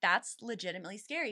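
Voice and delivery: plain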